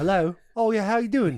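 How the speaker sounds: put-on English-sounding accent. Imitating a dad who answers the phone after getting mad: Wolf of Wall Street dad British accent. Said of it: "answers with a British accent".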